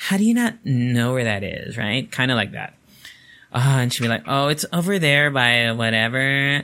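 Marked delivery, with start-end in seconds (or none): 4.3-6.6 put-on slow, patronizing, condescending tone. Quoting how she would answer a question about a location, mock-condescending tone. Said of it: "It's like a very condescending tone".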